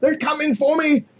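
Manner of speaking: terrified screaming. Voicing a fleeing librarian running for the docks: librarian screaming in terror. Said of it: "he's screaming the whole time".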